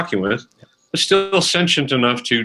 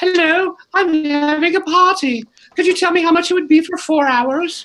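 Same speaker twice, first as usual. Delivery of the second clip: very high, fake put-on voice. Showing how most people call their competition, in a very high voice. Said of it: "getting a very high voice".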